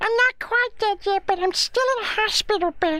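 very high-pitched, squeaky character voice. Talking to John on screen, speaking as Elmo, Elmo voice. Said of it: "I can hear Elmo".

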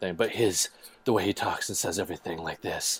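low, hushed, intense voice. Comparing an actor to Kiefer Sutherland from 24, in an intense Kiefer Sutherland voice. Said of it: "This is my intense voice".

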